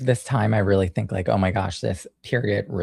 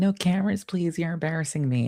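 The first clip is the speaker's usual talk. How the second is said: acted-out high screaming in a kid voice; 8 semitones higher than usual. Recalling a video clip of their younger self: retelling own past screaming. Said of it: "One day I'm screaming".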